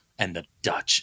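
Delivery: angry, fuming, intensely serious delivery. Retelling how Michael Caine says a line: imitating Michael Caine sounding mad. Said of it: "and he's just so mad".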